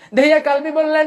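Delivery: impassioned preacher's cry.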